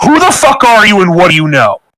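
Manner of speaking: aggressive, hostile acted tone. Grabbing someone by the collar and pushing them against a wall: aggressive in-character demand. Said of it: "grabs you by the collar and pushes you against the wall".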